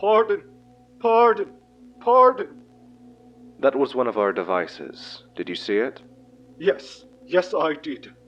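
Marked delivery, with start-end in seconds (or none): 0.0-2.6 very high, shrill, loud, distressed cries. An entity reacts after a device is lowered into its surface, distressed.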